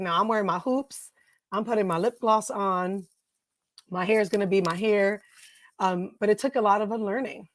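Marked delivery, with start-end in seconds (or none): none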